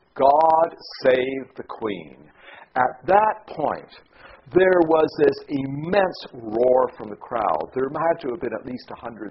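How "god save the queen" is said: mock, massive, booming parade-ground bellow. Recounting the regimental sergeant major calling out in the courtyard, retelling a massive bellow. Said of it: "in a massive voice that you could hear right across the plaza".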